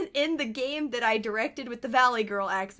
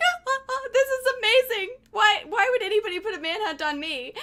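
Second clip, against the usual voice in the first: put-on giggly, stumbling chatter, very high; 11 semitones higher than usual. Retelling laughing after being asked to take a manhunt: imitating own past laughing. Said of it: "And then I start laughing, like".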